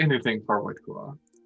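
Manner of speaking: most caring, doting, tender voice, quick. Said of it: "she says in the most caring, uh, voice".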